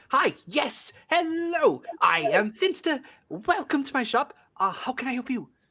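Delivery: very high-pitched, giddy creature voice. Playing the kobold Finster greeting a visitor to his shop: giddy Finster kobold voice. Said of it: "fairly average sized kobold running around all giddy like".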